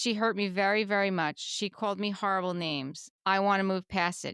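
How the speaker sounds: ordinary talk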